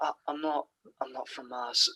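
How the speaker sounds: put-on muttered offended voice. Recalling a favourite scene, imitating the Doctor muttering under his breath. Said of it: "The way he says just under his breath".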